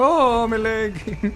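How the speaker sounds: put-on Irish accent, pitched very high. Acting out someone whose leg got blown off, in an Irish accent. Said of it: "I don't know why they sound Irish".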